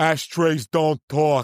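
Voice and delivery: put-on New York Queens accent. Retelling what a man answered when asked a question: imitating a thick Queens accent. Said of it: "He has like the most like Queen's accent".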